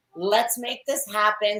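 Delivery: ordinary talk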